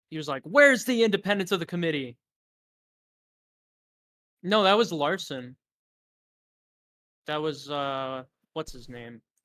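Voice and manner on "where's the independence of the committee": high, raised, hollering yell. Retelling a committee clip: imitating John Larson yelling. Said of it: "he yelled".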